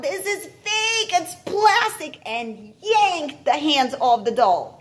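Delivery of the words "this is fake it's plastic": very high-pitched, shrill yell. Reading the narrator grabbing a toy from another child's hand, yelling.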